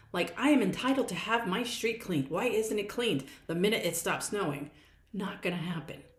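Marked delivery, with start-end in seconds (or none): none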